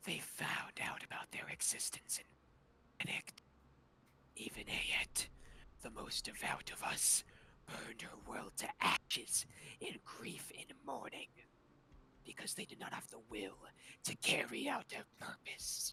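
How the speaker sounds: scratchy, raspy put-on god voice. A god speaks in a mortal's mind during an actual-play game, scratchy false-god voice. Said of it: "you hear that scratchy voice. / you hear that scratchy voice".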